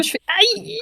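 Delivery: mock, high, fast yelp of pain.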